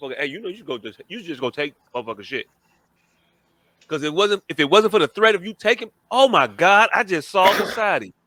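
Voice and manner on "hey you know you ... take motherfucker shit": half-whispered, under the breath. Acting out a middleman urging someone to steal: imitating someone half-whispering. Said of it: "And they whisper to a motherfucker".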